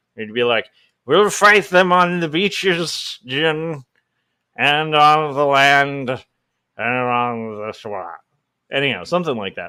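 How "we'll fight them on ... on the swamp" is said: bad slow speech voice, every "on" stretched. Imagining a Churchill impression saying a nickname: bad Winston Churchill impression. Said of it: "your amazing Winston Churchill".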